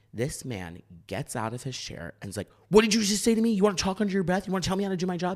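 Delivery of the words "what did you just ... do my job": very high, shrill screaming rant. Retelling a bouncer confronting the group, imitating a man screaming. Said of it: "Starts screaming".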